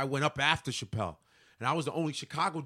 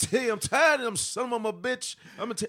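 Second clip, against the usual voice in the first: put-on raw, ranting delivery with Chicago accent; 9 semitones higher, 5 dB louder than usual. Retelling how a comedian talked, imitating Bernie Mac. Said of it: "He'd be like".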